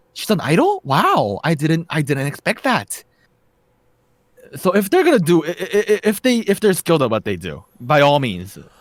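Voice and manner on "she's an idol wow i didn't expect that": put-on middle-aged woman voice, higher. Describing the mom's reaction to an idol actress, the speaker imitates a korean ajumma mom. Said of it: "I'm gonna channel my inner Ajumma".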